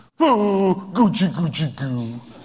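put-on slow, mushy, lovey-dovey baby talk. Mocking a woman talking to her husband: imitating baby talk. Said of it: "that's how this gal is talking to her husband".

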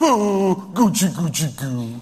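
put-on slow, cooing baby talk. Mocking a woman who talks to her husband like this: imitating baby talk. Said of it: "that's how this gal is talking to her husband".

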